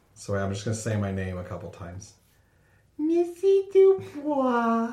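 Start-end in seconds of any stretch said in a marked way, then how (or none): 3.0-5.0 put-on bad little girl voice, much higher and louder. Trying out a new character voice by saying the name, in a terrible little girl voice. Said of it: "my terrible little girl voice".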